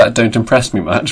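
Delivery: ordinary talk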